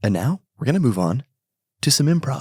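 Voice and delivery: audiobook-style narration. Speaker redoing their last line for the co-host, audiobook narrator voice. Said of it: "let me hit that again like it's an audiobook".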